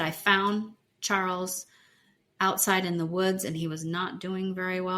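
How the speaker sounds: ordinary talk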